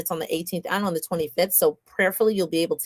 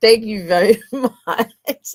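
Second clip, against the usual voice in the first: talking through laughter, higher and louder; 4 semitones higher, 8 dB louder than usual. Thanking the previous speaker at the wrap-up, laughing while talking. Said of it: "I'm laughing because".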